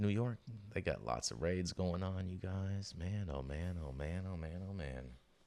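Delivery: half-whispered under the breath, very quiet. Speaking to the others on the show, half-whispering. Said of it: "Sounds like you're whispering".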